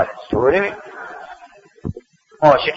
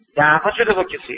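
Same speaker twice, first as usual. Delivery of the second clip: plain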